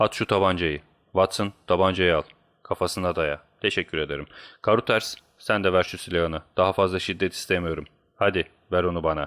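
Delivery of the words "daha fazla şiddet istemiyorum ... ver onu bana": plain reading voice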